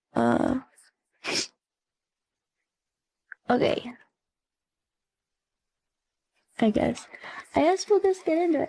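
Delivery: voice held steady, fighting back tears. Thanking subscribers after surprising news, holding back tears. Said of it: "I'm gonna try my hardest not to cry".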